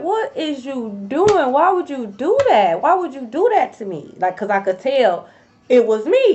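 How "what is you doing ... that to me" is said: sobbing, tearful, pleading crying voice. Recounting a dream confrontation, acting out own crying, pleading. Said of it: "And I start crying".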